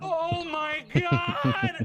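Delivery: very high, shrill, swooping scream of shock. A character looks in and sees the bodies: screaming.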